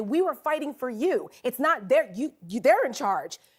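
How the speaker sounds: normal talking voice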